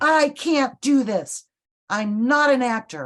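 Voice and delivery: put-on frustrated bark. Speaker retelling a frustrated man snapping at her under deadline, retelling a barked outburst. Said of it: "kind of barked at me".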